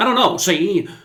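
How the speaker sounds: put-on, old-fashioned, old-timey 1920s-style voice. Saying goodbye at the end of a video, old-timey 1920s voice. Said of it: "why am I talking like an old-timey nineteen twenties person".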